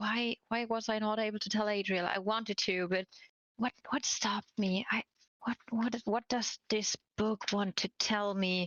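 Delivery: quiet whispering to oneself. Acting out thinking aloud while reading a book: whispering to oneself. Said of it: "And I am whispering that out".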